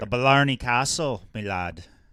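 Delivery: attempted Irish accent. Answering their own question about what they'd do on the trip, in an attempted Irish accent. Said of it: "That doesn't sound like a. Irish".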